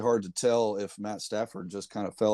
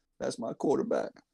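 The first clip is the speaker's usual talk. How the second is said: put-on tearful sobbing, fake crying; 3 semitones higher than usual. Ranking quarterbacks, imitating Terrell Owens: Terrell Owens mock crying. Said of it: "I got my T O face going on".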